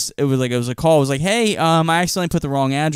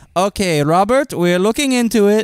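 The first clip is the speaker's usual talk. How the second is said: put-on Indian accent, pitched up; 6 semitones higher, 4 dB louder than usual. Telling of calling DoorDash support and quoting the agent: imitating a DoorDash agent's accent. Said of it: "You can guess what accent that is".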